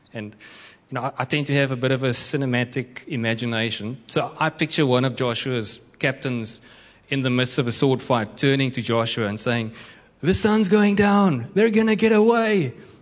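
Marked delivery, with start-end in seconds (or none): 10.2-12.7 put-on American accent, very high and loud. Picturing one of Joshua's captains in a sword fight turning to Joshua, use an American accent. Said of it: "it's always in an American accent".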